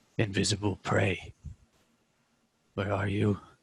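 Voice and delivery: deep, hushed, guttural beast voice. Voicing the female creature answering the party, in a guttural deep voice. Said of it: "You hear a guttural, deep voice back".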